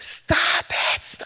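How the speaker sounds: put-on whispered hysterics, hushed, breathy and frantic. Act out a mom while her sons fight in a headlock, imitating mom's hysterical yelling. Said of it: "She's going hysterical".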